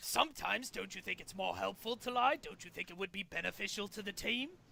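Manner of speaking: fiendish put-on game-show host voice. The villain needles a trapped hero with question after question, fiendish Orkestria voice. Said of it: "The fiendish [name] Orkestria has our heroes trapped in a prison of his own design, and the only way to escape is to play his impossible, unwinnable games. / leaving only [name] and [name] to compete".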